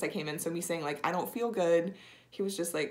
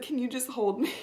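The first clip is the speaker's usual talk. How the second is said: mock sobbing, high-pitched; 6 semitones higher than usual. Retelling asking a nurse for a hug during a spinal tap, imitating sobbing. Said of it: "I was just like sobbing, and I said".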